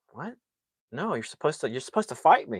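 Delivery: thrown-off, baffled, confused tough-guy voice. Retelling how a bully answered the laughing: imitating a confused bully. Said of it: "They'd just be like".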